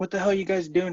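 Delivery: angry, pissed-off outburst. Retelling a show scene where a crew member's RV gets crashed into; acting out being pissed off. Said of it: "he's all like pissed off".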